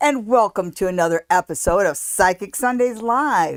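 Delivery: bursting, very excited, loud yelling. Welcome everybody to another episode of psychic sundays live, excited to be there, yelling. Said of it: "Why are you yelling?".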